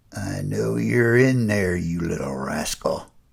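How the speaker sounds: low, menacing, toying growl with teasing lilt. Reading a story where a stranger speaks to a hidden child: low dangerous toying growl. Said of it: "He spoke in a low, dangerous growl with a toying inflection".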